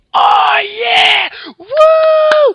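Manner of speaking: wild, high, loud whooping cheer.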